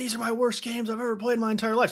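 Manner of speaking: mock toned-down, high, mild scream of frustration. Retelling a line said in a TV interview, imitating a scream. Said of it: "He screamed it".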